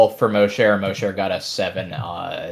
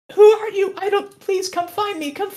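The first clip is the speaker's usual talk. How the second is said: put-on scared little girl voice, much higher pitch. Voicing a lost child calling from the woods, scared little girl voice. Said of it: "Sounds female to you".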